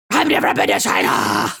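very low, dark hero-style voice.

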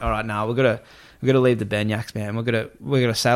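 ordinary talk

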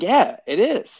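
high, loud, slow, excited voice. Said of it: "I was so excited".

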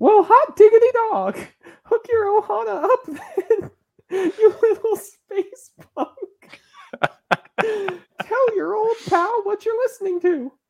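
very high, squeaky cartoon mouse voice. Playing a character who greets Stitch on a Disney podcast, in a cartoon mouse character voice. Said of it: "With character voice".

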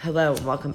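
silky, velvety, smooth put-on host voice. Imitating the smooth-voiced guy from a video just watched: smooth put-on voice. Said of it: "I feel like that guy. Very smooth voice right now".

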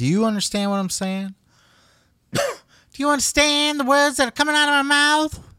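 very high-pitched, insistent delivery. Quoting an actual movie line while talking about Billy, do an impression of a movie quote. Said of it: "That's an impression of an actual quote from a movie".

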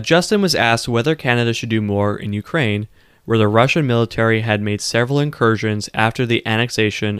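ordinary talk, nothing marked

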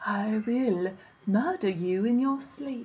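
put-on English accent. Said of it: "with an English accent".

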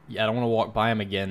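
ordinary talk

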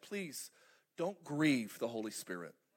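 low, tearful, weeping, pleading tone. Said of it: "she was weeping when she said it".

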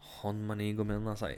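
ordinary delivery

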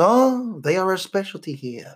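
fake, put-on French accent. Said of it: "He's also French".

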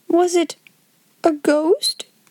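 slow, quaking, trembling with fright. Narrator reading Ermengarde asking Sarah about a ghost, quaking with fear. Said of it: "Quaked Ermengarde".

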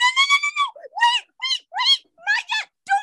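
put-on high-pitched cry. Retelling playing zombies after everyone has died, in a high-pitched voice. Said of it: "I get high pitched and I'm like".

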